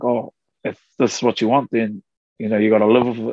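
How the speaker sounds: ordinary talk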